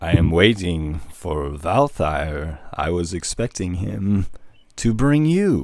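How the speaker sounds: drawn-out, plodding, very slow deliberate speech. Voicing a character who is waiting for someone, speaking very slowly. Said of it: "He's speaking very slowly".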